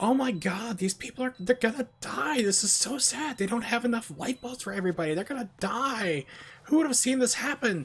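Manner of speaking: put-on piping, very high-pitched preteen young girl voice. Retelling what two twelve-year-old girls said in a theater: imitating twelve-year-old girls. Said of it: "These two twelve-year-old girls behind me".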